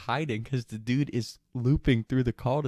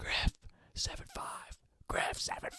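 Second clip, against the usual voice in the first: put-on whisper-yell, higher, quieter; 10 dB quieter than usual. Retelling sneaking out a back door, the speaker calls for two people, retelling a whisper-yell. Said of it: "I'm like whisper yelling".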